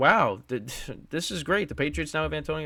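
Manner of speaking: mocking, sarcastic, ironic tone. Recalling a player joining the patriots, said in a sarcastic way. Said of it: "I'm saying it sarcastically".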